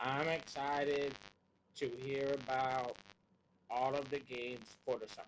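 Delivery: flat, unexcited, wholly unenthusiastic delivery. Answering a question about hype for the show, sounding unexcited. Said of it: "You don't sound excited to even be here".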